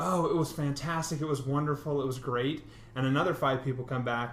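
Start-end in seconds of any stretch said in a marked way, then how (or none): none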